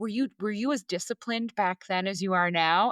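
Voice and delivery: ordinary talk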